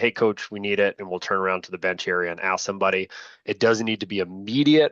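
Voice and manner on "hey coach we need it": normal talking voice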